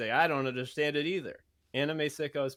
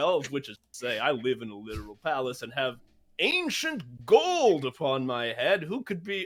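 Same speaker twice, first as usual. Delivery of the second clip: put-on British royal voice, louder; 4 dB louder than usual. Playing Prince Charles in an improv wrestling promo: Prince Charles impression. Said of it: "it's me, Prince Charles".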